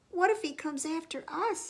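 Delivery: small, high, squeaky voice. Reading a children's story aloud, voicing Mouse with a squeaky voice. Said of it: "squeaked Mouse".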